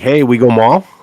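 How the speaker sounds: put-on regional Upper Peninsula Michigan accent. Retelling talking to friends at home one summer, in an Upper Peninsula accent. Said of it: "that's my U P accent".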